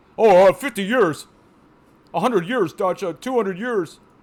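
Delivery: put-on scornful, derisive voice. A frustrated player mocking people who would believe the update, in a mocking voice of believers. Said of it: "I have to make a mocking voice".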